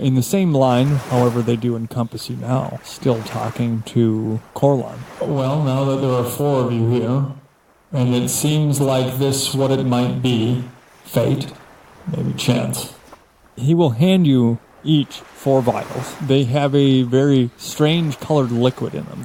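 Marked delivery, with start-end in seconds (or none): 5.2-12.9 ancient, mechanical, robotic ship captain voice. Speaking as a very old robotic ship captain addressing four newcomers about a chance meeting, in an ancient robotic captain voice. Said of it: "He has the appearance of a robot but he is from a different plane, as it were. He's from Mechanus. / instead of holding his arms crossed at his chest, / I am very old and I have much information. / I'".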